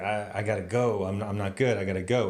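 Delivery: acted out, near tears, fighting to hold together. Retelling a distraught character's scene at work: imitating Anthony Rapp holding back tears. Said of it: "he's trying not to cry, but he's almost crying".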